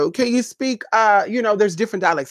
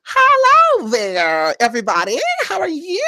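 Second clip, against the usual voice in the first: high, swooping, drawn-out fake California accent; 7 semitones higher than usual. Mocking people who switch their voice, the speaker mimics a california accent. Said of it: "they're trying to mimic California".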